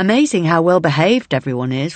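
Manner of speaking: ordinary delivery, nothing marked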